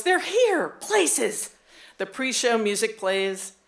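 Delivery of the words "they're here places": squealing, very high. Retelling how the stage manager called out before the show: imitating a squeal. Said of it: "The stage manager squeals".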